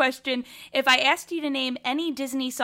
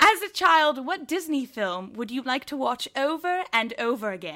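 put-on British English accent. Asking a guest a question on request, in a British accent. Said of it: "asking these questions in a British accent".

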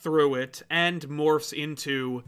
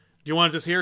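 plain

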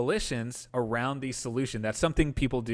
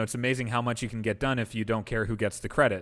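ordinary delivery

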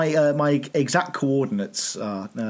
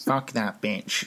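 hushed, soft, muttered put-on voice; 5 semitones lower, 5 dB quieter than usual. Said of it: "I don't know why I've given him that voice".

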